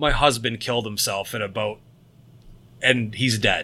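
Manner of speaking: put-on dead-serious delivery. Retelling a woman's line from a movie scene, retelling a deadpan line. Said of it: "she says in the most deadpan fucking serious face".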